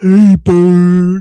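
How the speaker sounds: very loud puppet elephant voice, "bird" drawn out. Describing how a woman sounds, imitating her with a Sesame Street elephant voice. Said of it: "She sound like motherfucking the um the elephant... off of Sesame Street".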